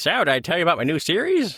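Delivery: high-pitched, annoying, pushy voice. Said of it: "annoying voice".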